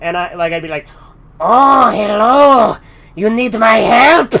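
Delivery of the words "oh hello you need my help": put-on creepy voice, very slow, every word oozed out. Recalling a voice they kept using for a character, Peter Lorre voice. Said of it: "I kept doing this Peter Lorre voice for this character named Fester".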